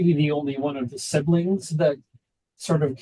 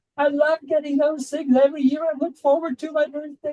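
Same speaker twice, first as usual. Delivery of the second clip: put-on sloppy drunken slurring, very high pitch; 12 semitones higher than usual. Quoting a woman who reads her Facebook announcements, imitating drunk slurring. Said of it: "just slurring her words".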